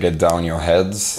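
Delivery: ordinary talk, nothing marked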